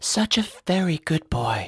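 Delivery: breathy, close, breathed words. A woman speaks right into the narrator's ear, breathed into his ear. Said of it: "she breathed into my ear".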